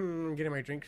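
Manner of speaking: put-on snooty voice. Retelling a stranger who cut in line: imitating a snooty tone.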